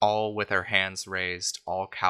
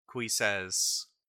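plain

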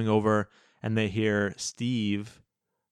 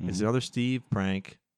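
normal talking voice

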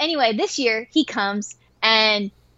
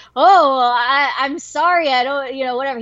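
acted-out mock stuttering. After joking at a guy who turned red, the speaker imitates him stuttering. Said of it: "He's stuttering".

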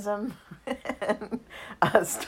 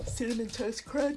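yawning, words stretched and pitched up; 5 semitones higher, 7 dB quieter than usual. Reading out a list of cold brew drinks: yawning. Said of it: "Sorry, I'm yawning".

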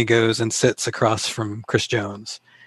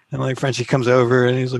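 ordinary talk, nothing marked

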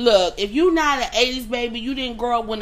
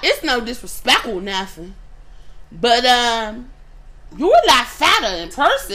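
put-on Southside accent; 4 dB louder than usual.

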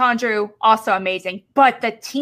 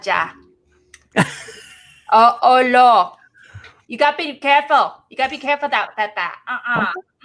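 speaking in a grandma's way of talking; 2 semitones higher, 3 dB louder than usual. Quoting a grandmother to warn another speaker: imitating grandma. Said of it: "I'm doing my grandma".

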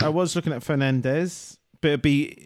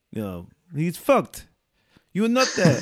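fake French accent sounding Russian, much higher; 3 semitones higher than usual. Attempting an accent impression, a friend says it sounds Russian: fake French accent sounding Russian. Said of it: "You sound Russian".

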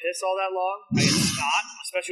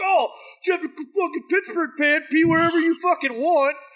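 high-pitched, loud, mocking jeering yell. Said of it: "yelling at me like".

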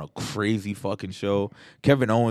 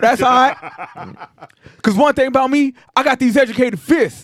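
put-on country wrestler promo voice, higher and louder; 10 dB louder than usual. Retelling a wrestling promo, imitating Jay Briscoe promo. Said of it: "their promos would be like Jay Briscoe standing there like".

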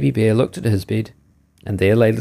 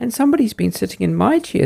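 shrill, squeaky, small, high-pitched voice; 11 semitones higher than usual. Narrator reading the three bears story, speaking as Baby Bear, shrill squeaky voice. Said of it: "squeaked the baby bear in his shrill little voice".

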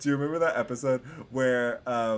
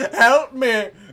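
mock very shrill, very loud, frantic panicked cry; 12 semitones higher, 12 dB louder than usual. Retelling calling customer service, imitating own panicked plea. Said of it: "just went full Karen and was like".

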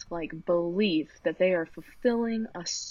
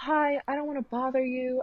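put-on overly polite manner, higher; 6 semitones higher than usual. Retelling asking a waiter for food after a long wait: imitating own overly polite request.

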